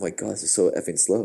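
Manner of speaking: ordinary talk, nothing marked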